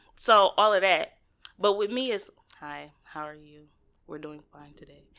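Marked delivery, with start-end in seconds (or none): 2.6-5.0 put-on dry, flat voice, lower, quieter. Contrasting how he talks to her and to his friends, imitating a dry, flat voice. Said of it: "he be all dry".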